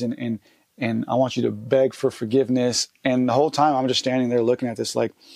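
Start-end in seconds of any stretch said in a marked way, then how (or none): none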